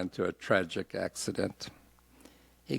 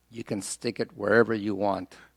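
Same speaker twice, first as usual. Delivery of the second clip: ordinary delivery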